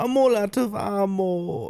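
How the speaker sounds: put-on German accent, high, very slow, "ammo" stretched. Describing how a game character's voice changed, imitating a german accent. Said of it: "he sounded very like German".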